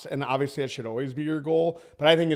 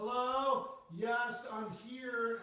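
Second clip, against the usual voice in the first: put-on very high, very soft, very slow grandma voice; 9 semitones higher, 11 dB quieter than usual. Complaining about clients who join calls from mobile, the speaker imitates them as an old grandma. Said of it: "like my grandma gets on the call".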